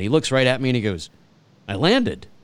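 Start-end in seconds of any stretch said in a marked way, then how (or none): 1.7-2.2 put-on obvious-answer, duh tone. Retelling a pilot's answer about a lost gas cap: imitating a what-do-you-think-i-did reply. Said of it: "Just like, what do you think I did?".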